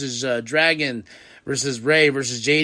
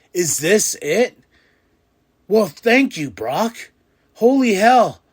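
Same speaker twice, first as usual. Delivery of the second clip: acted, emotional, flabbergasted disbelief, pitched up; 6 semitones higher, 4 dB louder than usual. Retelling his own reaction to a wrestler retiring: retelling own emotional reaction. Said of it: "the emotions going through me".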